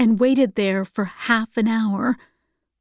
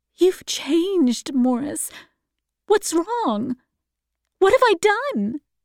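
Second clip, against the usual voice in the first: anguished, pleading, high-pitched distressed cry; 7 semitones higher than usual. A woman pleads with Morris as he leaves her, crying out. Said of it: "She cried".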